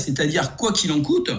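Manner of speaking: ordinary talk, nothing marked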